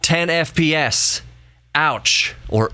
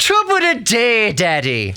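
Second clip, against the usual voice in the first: put-on very high child's voice with Irish accent; 9 semitones higher than usual. Acting out a line from the speaker's child, in an irish accent. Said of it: "why does our child have an Irish accent".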